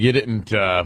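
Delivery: ordinary talk, nothing marked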